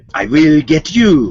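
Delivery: put-on low Eastern European villain accent. Asked to do an Eastern European accent, playing Doctor Doom. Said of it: "do an Eastern European accent".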